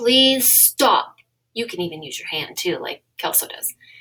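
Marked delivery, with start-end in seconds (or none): 0.0-1.2 strong, firm, no-nonsense, raised assertive voice. Teaching a group how to tell someone to stop, in a strong, assertive voice. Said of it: "use our strong voice and our eyes".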